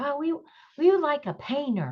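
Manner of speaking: snide sarcastic put-on voice. Recounting a Facebook group's request for a painter, sarcastically quoting them. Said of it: "I'm being sarcastic".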